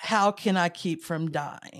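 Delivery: ordinary delivery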